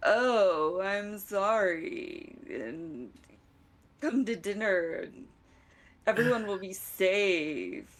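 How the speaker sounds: sarcastic, insincere, very slow, with a drawn-out oh. Repeating a message for the group as asked, Yizak impression, sarcastic. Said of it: "repeat exactly what he said in your best Yizak voice".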